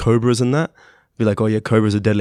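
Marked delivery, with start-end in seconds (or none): none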